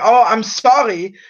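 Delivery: put-on German accent. Retelling a German lady's reply to the speaker in a store; imitating a German accent. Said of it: "a German accent".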